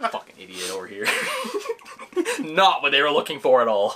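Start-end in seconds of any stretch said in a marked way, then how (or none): 0.1-1.1 soft, low, whispered, self-mocking mutter. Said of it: "I was like".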